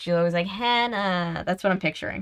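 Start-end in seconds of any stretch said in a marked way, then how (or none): 0.5-1.4 mock nasally character voice. Speaker imitates a TV show's heiress friend character, in a really nasally voice. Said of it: "the really nasally voice".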